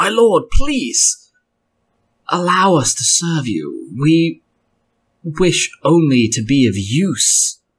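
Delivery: slow, drawn-out, begging voice. Voicing a voice in the room that begs a lord to accept service: pleading voice from the room. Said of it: "the voice sounds out within the room again".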